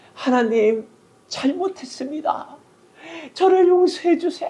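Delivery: very high-pitched, repentant, pleading voice. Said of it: "기도의 목소리가 바뀌는데".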